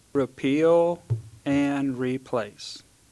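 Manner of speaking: slow, deliberate, each word laid out carefully. Answering in a public meeting, saying the key phrase slowly: saying it slowly. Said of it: "I'm gonna say it slow".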